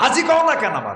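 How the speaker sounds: high, loud, indignant whine, vain and offended.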